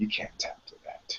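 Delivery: gentle, sorrowful, hushed near-whisper. Retelling what a rolling partner said after the tap: retelling a sad remark. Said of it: "he just looks at me sadly and says".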